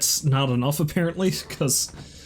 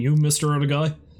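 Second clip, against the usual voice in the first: plain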